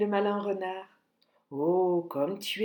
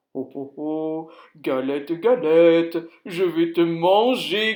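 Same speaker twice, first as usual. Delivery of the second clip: big, deep, growly bear voice; 4 semitones lower, 8 dB louder than usual. Narrating a story, voicing the bear in a big growling voice. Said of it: "grogne l'ours de sa grosse voix".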